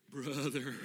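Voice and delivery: quivering, trembling, wavering voice. Saying brother in a quavery voice, as the talk describes: quavery voice. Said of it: "you have to talk in a quavery voice. That kind of thing".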